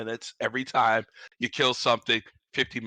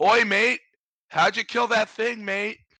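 put-on Australian accent, louder; 11 semitones higher, 5 dB louder than usual. Speaker imitating a weird Aussie dude from the game, in an Aussie accent. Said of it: "that weird Aussie dude that comes in and goes like".

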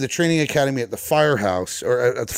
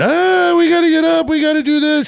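mock teenage girl's screaming, much higher; 6 dB louder than usual. Telling a story about a car fire, the speaker acts out the instructor: imitating a 17-year-old girl screaming. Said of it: "turns into this 17-year-old girl just screaming".

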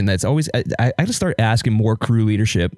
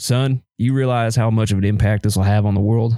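put-on southern-accented old-timer voice. Quoting their grandfather in New Mexico, imitating grandfather's southern accent. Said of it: "in his southern accent".

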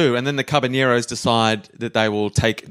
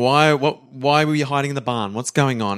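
ordinary talk

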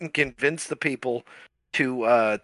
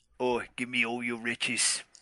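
low, soft, gruff pirate voice, sort of cockney; 4 semitones lower, 7 dB quieter than usual. Describing how a pirate sounds, gruff pirate voice. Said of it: "when i picture a pirate voice".

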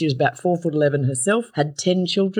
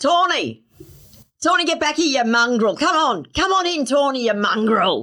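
mock yelling, higher pitch; 9 semitones higher than usual. Retelling how a grandmother called a dog from the back deck: imitating grandmother yelling. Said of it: "she'd yell out".

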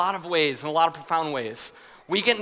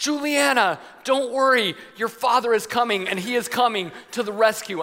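brave, heroic, pitched-up call; 5 semitones higher than usual. A dad re-enacts calling to his daughter from an inner tube, retelling his own yell. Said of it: "I'm like yelling this in the tube".

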